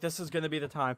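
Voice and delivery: ordinary delivery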